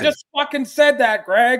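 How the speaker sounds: put-on mean outburst. Imitating a cohost's usual mean reaction: imitating a mean angry outburst. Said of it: "He wasn't even mean".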